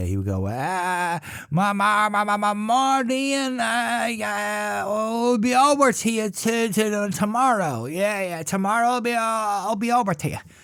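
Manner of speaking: put-on elderly man's Dublin accent. Recalling an old dublin man who stammered, doing his old dublin accent. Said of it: "old Dublin man with a, a Dublin accent you don't hear anymore".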